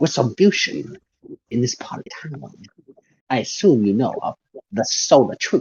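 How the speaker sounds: put-on character accent with a partial Chinese touch. Playing a character in a role-play scene, put-on partly Chinese accent. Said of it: "He's speaking in an accent".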